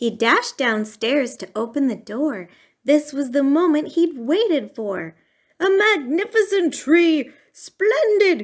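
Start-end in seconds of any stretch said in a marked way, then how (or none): 5.6-8.4 very high, ringing exclaimed cry. Dashing downstairs to open the door to the tree he waited for, he is crying out. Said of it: "he cried".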